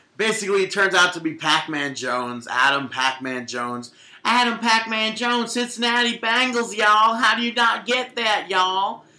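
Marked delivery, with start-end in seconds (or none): 4.2-9.0 spot-on put-on woman's voice, pitched up. Retelling what she said in a video, imitating her voice. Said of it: "I love your impression".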